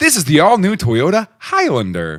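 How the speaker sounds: swooping TV car-commercial voiceover announcer voice. Aiming at suburban moms, the speaker demos the Toyota Highlander ad voice. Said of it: "Highlander is a different voice".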